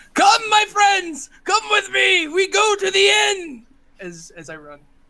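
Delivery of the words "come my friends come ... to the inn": very high, acted screaming call. Playing a dwarf running to the inn, screaming in character.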